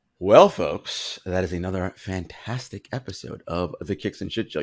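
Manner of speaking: very soothing radio host voice. Signing off the show's episode as a joke: NPR voice. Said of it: "I went into NPR voice".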